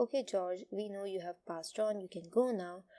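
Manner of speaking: usual speaking voice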